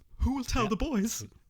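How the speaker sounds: very high, exaggerated, fake shocked overreaction. Reacting on request to news that a film is cancelled: fake shocked overreaction. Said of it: "hyperbolically, um, overreact".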